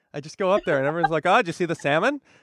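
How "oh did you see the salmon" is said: put-on Seattle local's accent. Mimicking people up in Seattle asking about the salmon, put-on Seattle accent. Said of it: "That's a Seattle accent".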